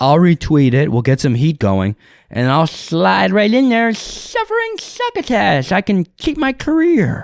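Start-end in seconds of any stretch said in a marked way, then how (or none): 2.7-7.2 pitch way up and swooping around. Speaker joking about the Daffy Duck voice actor breaks into Daffy Duck voice. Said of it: "the guy that does the voice of Daffy, Daffy Duck".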